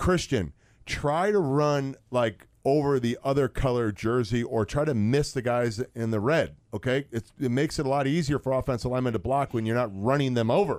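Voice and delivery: ordinary talk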